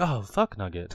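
super casual, low, utterly nonchalant, unbothered tone. Imagining the other speaker dying in Dark Souls: imitating someone saying it nonchalantly. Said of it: "super nonchalantly".

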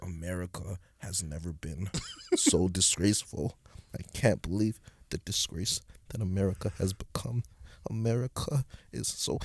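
slow, hushed, whispered grumbling under breath. Retelling a man on a plane muttering as he sits down, imitating a muttered whisper. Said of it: "he's like whispering this under his breath".

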